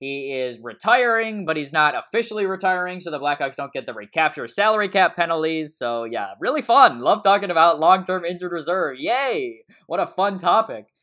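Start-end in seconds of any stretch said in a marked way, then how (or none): 6.0-10.8 loud, sarcastic, fake-enthusiastic cheer. Reacting to hockey salary cap news: sarcastic. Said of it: "I say that kinda sarcastically".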